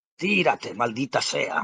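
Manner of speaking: threatening, bullying, menacing tone. The promoter speaks to the fighter in his corner between rounds, menacing voice. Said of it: "soltó con voz amenazadora".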